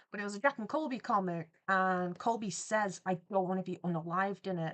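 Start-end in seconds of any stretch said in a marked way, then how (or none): none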